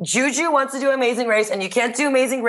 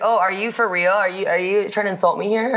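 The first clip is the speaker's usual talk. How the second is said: ordinary talk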